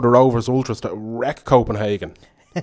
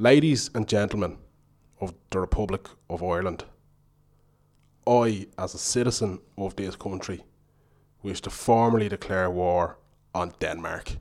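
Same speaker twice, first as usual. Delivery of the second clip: solemn, formal, serious low announcer-style voice; 4 semitones lower, 8 dB quieter than usual. Opening the broadcast with a formal declaration, in a put-on serious voice. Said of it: "I put on my serious voice for this".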